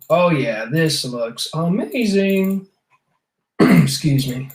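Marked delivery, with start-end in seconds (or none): 0.1-2.7 voice catching in a squeaky slip. Coloring a drawing with the paint bucket tool and reacting, voice squeaking. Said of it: "I don't know why my voice squeaked like that".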